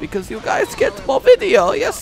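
put-on German accent, pitched high.

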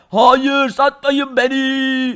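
odd, altered alien voice with beni drawn out. A captured green alien answers its captors, in a changed green alien voice. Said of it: "yeşil uzaylı sesi bile değişmiş".

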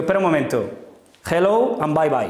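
put-on heavy Andalusian accent, at its strongest. Retelling answering an English teacher's level interview, in a thick Andalusian accent. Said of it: "con mi acento andaluz al máximo".

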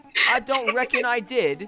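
very loud, very high, shrill, drawn-out put-on British accent. Joining a joke about being british from now on: put-on british accent. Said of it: "let's be British from now on".

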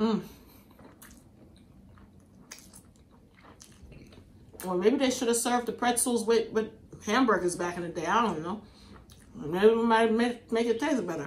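talking with a full mouth, chewing. Tasting pretzel bread and commenting on it: talking with mouth full. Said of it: "My mouth is full".

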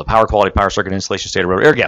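very fast, rapid-fire, rushed rattled-off delivery. Presenter rattling off the list of fault zones in a case study, very fast. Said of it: "I say that very fast".

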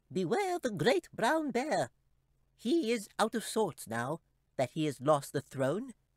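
very high, swooping, squeaky little chipmunk voice. The narrator reads the chipmunk speaking to Katie, squeaky little chipmunk voice. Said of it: "in his squeaky little voice".

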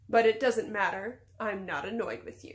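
ordinary delivery, nothing marked

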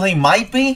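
high-pitched, mocking parroting voice. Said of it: "and you're still".

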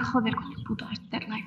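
quiet, low muttering under the breath. Describing how someone can be heard muttering: muttered under the breath. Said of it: "Así, como muy por lo bajo".

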